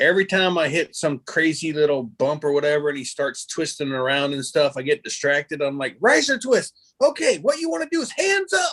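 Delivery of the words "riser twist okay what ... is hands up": play-acted very high shouting, hollered yell. Retelling coaching a twisting paramotor figure on the mirror: imitating own yelling. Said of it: "the whole time I'm yelling".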